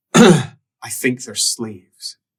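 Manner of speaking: deep, throaty, guttural voice, slow. Narrating a scene, voicing a figure who speaks in dark tongue, deep guttural voice. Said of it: "in a deep guttural voice".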